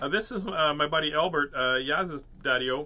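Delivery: ordinary delivery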